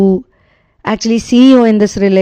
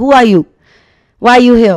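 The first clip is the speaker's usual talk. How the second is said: acted-out heated, upset, angry shout. Telling a story, the speaker acts out a woman opening the door: imitating an angry shout. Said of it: "literally shouting and very angry and upset".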